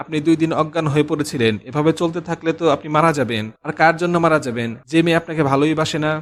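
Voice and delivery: ordinary talk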